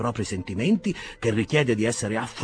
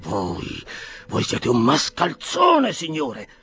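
furious gasping, higher pitch; 3 semitones higher than usual. The doctor, refused by a stranger, gasps furiously at him. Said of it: "boccheggiò furibondo il dottore".

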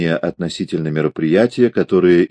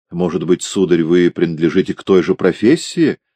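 ordinary delivery, nothing marked

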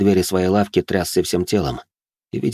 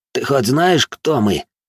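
hissed through gritted teeth, higher and slower; 5 semitones higher than usual. One of two remaining opponents challenges the narrator, through gritted teeth. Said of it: "сквозь зубы процедил".

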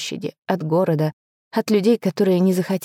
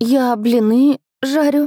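trembling, shaking, pitched-up voice; 6 semitones higher, 4 dB louder than usual. Narrator voices the first-person heroine's faltering line: trembling voice. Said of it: "чувствуя, как голос дрожит".

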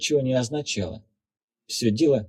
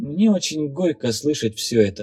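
usual speaking voice

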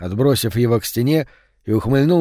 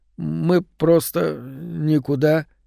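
stuttering, stammering mumble, higher pitch; 3 semitones higher, 3 dB quieter than usual. Reading Mark's reply to the bull's menacing question, stammering mumble. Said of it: "заикаясь, пробормотал Марк".

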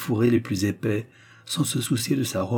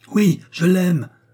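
unflinching, loud, high defiant cry; 8 semitones higher, 7 dB louder than usual. The young girl answers the furious lady's jeer, crying out. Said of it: "s'écria la jeune fille sans baisser les yeux".

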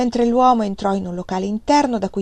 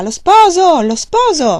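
booming, loud, very slow, drawn-out announcing shout; 9 semitones higher, 9 dB louder than usual. A gatekeeper pockets the silver and strides through the gate, shouting.

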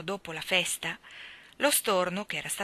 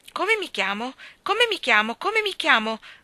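very loud, shrill, piercing, anxious cry; 8 semitones higher, 8 dB louder than usual. Narrator reads a starling's repeated question, a shrill, anxious cry. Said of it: "gridò lo storno con voce stridula e ansiosa".

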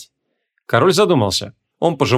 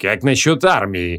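cold, lower-pitched delivery; 4 semitones lower than usual. A narrator reads a character's reply to the king, cold reply. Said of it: "холодно ответил Креол".

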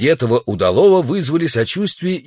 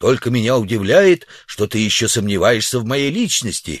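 plain

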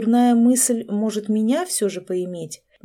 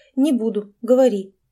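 plain

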